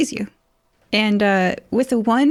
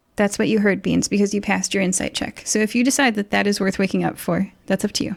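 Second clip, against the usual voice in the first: ordinary talk, nothing marked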